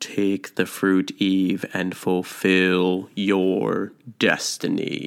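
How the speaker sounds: mock menacing, sinister voice, very slow and drawn out. A speaker retelling Eve's story voices the voice urging her, put-on sinister voice. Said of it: "this kind of sinister voice in the background".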